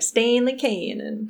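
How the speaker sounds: name said in Southern American accent. Saying a book character's name for fun: Southern American accent. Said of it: "I just want to say it in like a southern accent".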